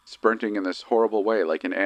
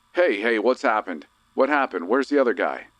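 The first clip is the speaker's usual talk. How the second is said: mock hard, loud, urgent alarmed yell; 3 semitones higher than usual. Retelling a frantic ride, imitating own past shouting. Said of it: "So I start yelling like".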